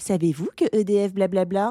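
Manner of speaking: robotic, automated recorded-announcement voice. Retelling a phone hold message: imitating a robotic voice. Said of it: "Information d'une voix robotique".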